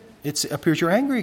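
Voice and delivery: put-on kind, nice, gentle, non-accusing tone. Retelling what they said to an angry man, in a nice tone of voice. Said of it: "In a nice tone of voice like that".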